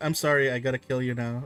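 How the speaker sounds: mock-solemn game master voice. Acting as the DM who must kill a player: acting as the DM. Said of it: "The D M says".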